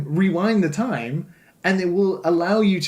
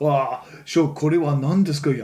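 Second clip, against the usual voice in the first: effortlessly cool delivery, spoken in Japanese; 3 semitones lower than usual. Imitating the Japanese dub of Ryan speaking to his friend: super cool Japanese Ryan voice. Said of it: "he's super cool".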